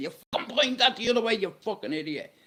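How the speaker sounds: rushed, high-pitched shout. Speaker retells shouting at his mate about where he pointed it; retelling a shout at his mate. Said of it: "I'm shouting at him saying".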